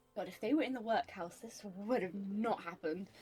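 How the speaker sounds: quiet muttering to herself. Voicing a character appalled at the messy office: muttering to herself. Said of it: "She mutters to herself".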